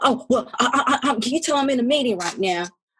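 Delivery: frightened, stammering, stumbling voice. Retelling the answer on the phone: imitating a scared Miriam. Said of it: "And Miriam got scared".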